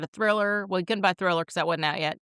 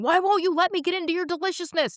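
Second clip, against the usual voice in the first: shrill, very high-pitched, frustrated yell; 12 semitones higher, 3 dB louder than usual. Retelling struggling to get into food, the speaker acts it out: retelling a yell at food. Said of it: "I'm yelling and shaking my fist going".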